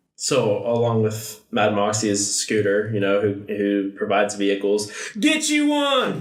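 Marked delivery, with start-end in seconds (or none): 5.2-6.2 very high, goofy comic character voice, jumping way up. Describing the vehicle provider in a game: Scooter voice. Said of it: "It's just his voice alone".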